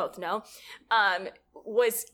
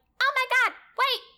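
shrill, very high-pitched, raised outburst; 5 dB louder than usual. Imitating how a friend will react on hearing the podcast: imitating Anisha. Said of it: "That's a really good impression of her".

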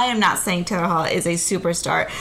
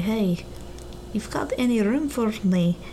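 attempted put-on Russian accent that drifts into Irish; 2 semitones higher than usual. Imagine the player calling Rads to ask for a place, in a put-on Russian accent that sounds Irish. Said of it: "That's a dead-on Russian accent".

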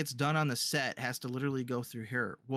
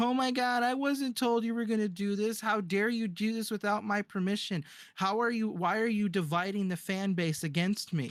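mock tearful crying, whiny and entitled; 7 semitones higher than usual. Retelling how Kathleen Kennedy reacted: imitating Kathleen Kennedy crying like a Karen. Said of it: "came out like a crying Karen".

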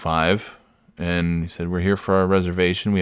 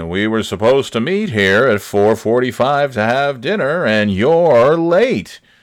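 loud, pitched-up game-show host cadence; 5 semitones higher, 6 dB louder than usual. Retelling Bob Barker scolding them for being late: Bob Barker voice. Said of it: "he was talking like he was on that show".

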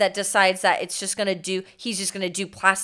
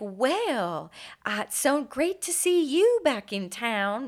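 very slow, high, fake-nice politeness in Southern accent; 5 semitones higher than usual.

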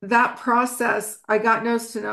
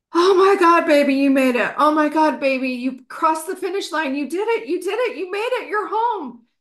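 high, screamed cry of joy torn with grief; 7 semitones higher than usual. Retelling kneeling over him, hands raised, calling out to him: retelling own scream. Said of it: "I started screaming".

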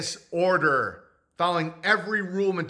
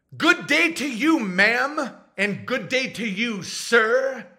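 slow, pitched-up, excessively polite, mannerly tone; 5 semitones higher than usual. Acting out buying bread in an imagined scene: imitating a very polite manner. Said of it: "That guy is so fucking polite".

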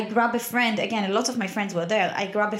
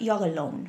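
mock, very, very theatrical and dramatic delivery; 2 semitones lower, 3 dB quieter than usual. Retelling what was said in one room: imitating a very dramatic delivery. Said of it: "very dramatic way of like".

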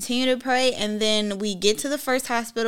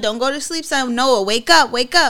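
put-on scream, louder; 3 semitones higher, 7 dB louder than usual. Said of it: "the way that you were screaming".

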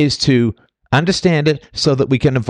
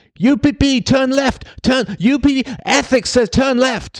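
very high-pitched, slow, drawn-out shouting; 12 semitones higher than usual. Picturing standing below a falling boulder: imitating yelling at it. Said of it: "me yelling at it".

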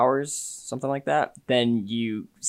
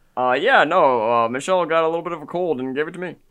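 higher, louder put-on sick old man voice; 5 semitones higher, 6 dB louder than usual. Playing Obama while greeting Ethan and Jordan: sick old Obama impression. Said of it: "I sound a little bit like a sick old Obama".

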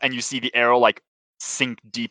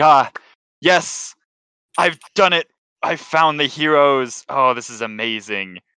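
excited cheering through a laugh; 3 semitones higher than usual. Recapping a scene, giving a character's cheering line while laughing. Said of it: "Kyra kind of like laughs".

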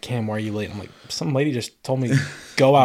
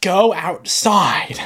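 mock very high, shrill, loud yell; 9 semitones higher, 5 dB louder than usual. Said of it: "some lady in the hallway yells at me".

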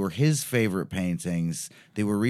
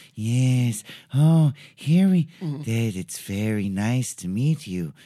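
put-on very slow, drawn-out old-horror-film voice; 2 semitones higher, 4 dB louder than usual. Showing how people do the Igor voice: Peter Lorre voice. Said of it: "that's Lori".

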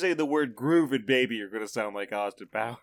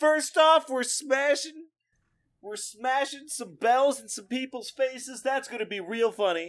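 fake hyped host voice, higher pitch; 12 semitones higher than usual. Pretending to open a prank channel video: mock prank YouTuber intro. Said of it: "it's Crankmaster sixty-nine back here".

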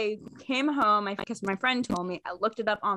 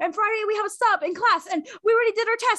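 mock very high, begging, sales-pitch pleading; 13 semitones higher, 4 dB louder than usual. Retelling her sales pitch to her dad: imitating her past pleading pitch. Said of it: "my sell pitch".

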